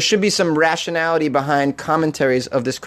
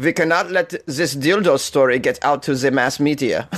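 put-on German accent. Imagining officials in Berlin talking, the speaker redoes their line in a put-on German accent. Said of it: "It's got to be a German accent".

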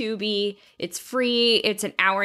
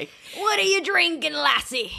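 put-on drunken pirate voice, much higher pitch; 8 semitones higher than usual. Playing a drunken pirate throughout the episode: drunken pirate voice. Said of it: "Erica will be a drunken pirate throughout this episode".

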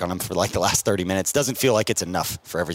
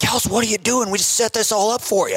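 acted-out scream, louder, much higher; 4 dB louder than usual. Recalling a coach's exchange with a player who took himself out, imitate the coach screaming. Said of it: "he just yells back".

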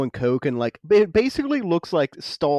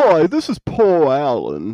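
loud, swooping, hammy sing-song caricature voice; 2 semitones lower, 5 dB louder than usual. Retelling a film scene with a fake answering-machine message, caricature Paul Allen voice. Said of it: "he does it like a very caricature voice".

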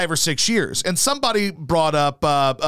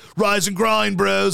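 mocking, imitated bro voice. Describing someone's morning Twitter videos, the speaker imitates his mocking bro voice. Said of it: "he's mocking like hard on dudes".

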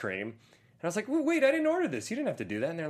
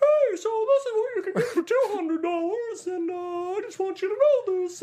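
very high, loud, cartoonish puppet squeak; 5 dB louder than usual. Retelling what a dancer said to him: Muppet voice. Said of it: "talked like a Muppet".

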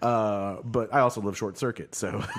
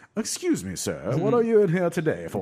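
put-on posh shop clerk voice, higher pitch; 5 semitones higher than usual. Joking about how fancy dispensary clerks would talk: imitating a posh dispensary clerk. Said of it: "they're just gonna be like".

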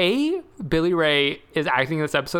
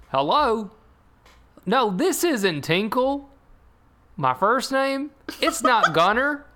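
put-on halting TV dad voice, higher pitch; 6 semitones higher than usual. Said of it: "this is exactly his line delivery".

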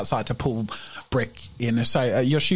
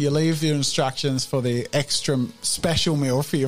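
usual speaking voice

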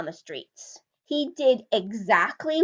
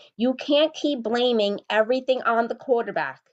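ordinary talk

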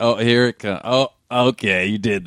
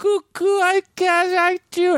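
silly, goofy voice, much higher, slower. Talking about funny voices in comedy, a speaker shows a silly funny voice. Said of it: "I can do like this".

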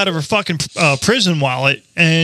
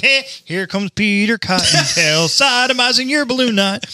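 put-on character voice, slow and drawn out; 4 semitones higher than usual. Joking about what the Easter Bunny should say to bad kids: Easter Bunny voice. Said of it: "the Easter Bunny should come like".

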